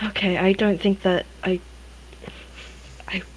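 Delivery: faltering, hushed whisper that trails off. Voicing the character Jen, turning to an injured companion: speaking quietly. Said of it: "so she's gonna say quietly".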